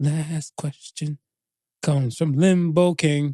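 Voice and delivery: weird put-on voice, drawn out slow. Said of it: "I don't know why I'm talking like this".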